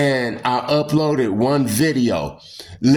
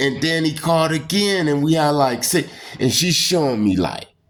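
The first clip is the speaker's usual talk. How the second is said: ordinary talk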